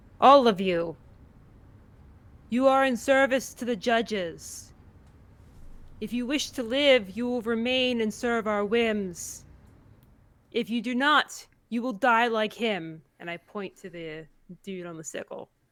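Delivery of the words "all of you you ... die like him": loud voice, higher pitch. A player's character turns to the assembled pirates and addresses them: loud declaration. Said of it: "declare in a loud voice to these assembled pirates".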